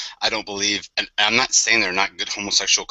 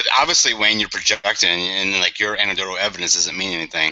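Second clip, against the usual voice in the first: normal talking voice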